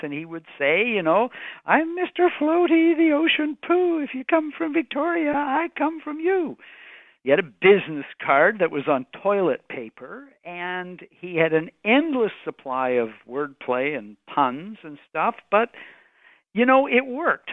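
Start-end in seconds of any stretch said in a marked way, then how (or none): 1.0-6.6 little, silly voice, pitched way up high. Describing a man who danced around at public meetings, the speaker quotes him in Mr. Floaty's high-pitched voice. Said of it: "in his little high-pitched voice".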